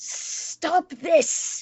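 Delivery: high, hissed-out line. A player voices her character grappling a foe, hissing at the director. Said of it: "she hisses out".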